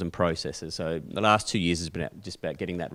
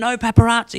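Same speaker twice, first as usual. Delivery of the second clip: high-pitched, frantic, shouted yelling; 12 dB louder than usual. Retelling a celebrity refusing a photo: imitating someone yelling. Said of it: "yelling at us and telling us to go away".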